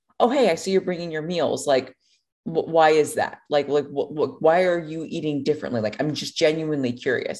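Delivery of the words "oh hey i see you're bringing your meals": ordinary delivery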